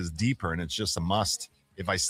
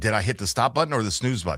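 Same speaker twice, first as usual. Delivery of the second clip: ordinary delivery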